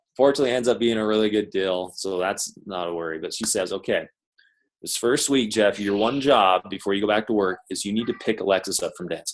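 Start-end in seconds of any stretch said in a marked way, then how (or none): none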